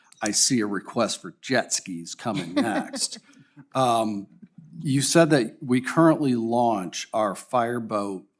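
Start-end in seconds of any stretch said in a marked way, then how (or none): 0.2-3.2 joking tone with a laugh in the voice. Responding to someone's earlier comment, half laughing, joking. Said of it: "I'll say this with joking in my voice".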